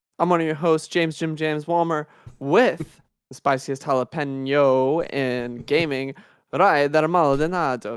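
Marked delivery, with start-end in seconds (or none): 6.6-8.0 put-on Italian accent, louder. Show host introducing his co-host, in a put-on Italian accent. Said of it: "That's an Italian accent".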